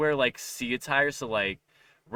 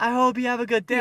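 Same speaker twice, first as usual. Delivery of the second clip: very high-pitched, loud, gushy, embarrassing-parent tone; 11 semitones higher, 6 dB louder than usual. Speaker imitates their mom seeing them off to school, in an embarrassing mom tone. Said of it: "in that mo- embarrassing mom tone".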